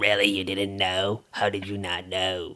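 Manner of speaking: put-on old smoker's voice.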